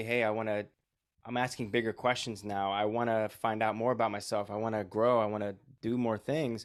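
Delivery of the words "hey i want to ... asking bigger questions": usual speaking voice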